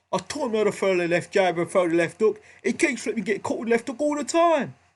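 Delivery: put-on Cockney accent. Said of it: "I use the Cockney accent there".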